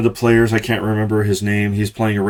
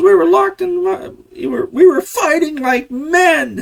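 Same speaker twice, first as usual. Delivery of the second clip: acted high-pitched shrill raging yell, "men" stretched. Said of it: "listening to Angry Joe lose his shit".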